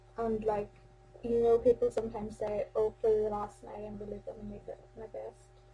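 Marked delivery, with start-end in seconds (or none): none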